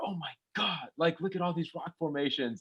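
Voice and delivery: alarmed, panicked, freaking-out outburst. Retelling a movie scene where the girl sees rock formations: imitating someone freaking out. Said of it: "the girl starts freaking out and she's like".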